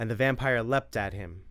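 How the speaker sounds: plain reading voice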